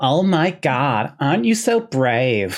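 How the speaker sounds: exaggerated, cheesy fake American accent, very slow, sing-song swoops. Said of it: "I'm going to put my cheesiest fake American accent on for this".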